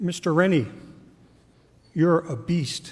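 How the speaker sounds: very slow, soft, drawn out word by word. Speaker retells what a man checking his notes told him, said really slowly. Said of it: "he said really slowly".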